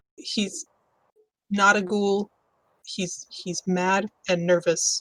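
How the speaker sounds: hushed, quiet half-whisper. During a tabletop game, a player speaks only to the group, half-whispering. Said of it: "I'm gonna whisper to the to the group".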